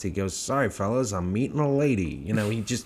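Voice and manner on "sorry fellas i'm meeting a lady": playful, jokey comic character voice. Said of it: "he's doing the voices".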